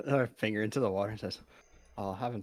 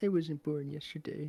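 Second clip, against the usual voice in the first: higher-pitched mumbling in a character voice; 6 semitones higher than usual. Voicing a character who mutters under his breath: mumbling in character. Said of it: "which kinda mumbles".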